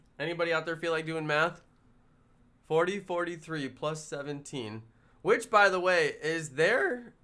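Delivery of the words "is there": cracking voice. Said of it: "as my voice cracks".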